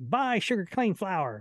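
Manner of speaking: put-on high, old-time radio ad announcer voice. Explaining how old radio ads sounded, in a high old-radio announcer voice. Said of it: "And it's this high voice".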